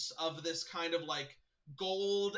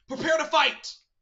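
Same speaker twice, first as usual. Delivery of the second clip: shrill, very loud, high battle cry; 10 semitones higher, 12 dB louder than usual. A game master voicing a figure drawing a sword, yelling a battle cry. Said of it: "one of them is gonna yell out".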